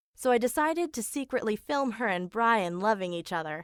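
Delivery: ordinary talk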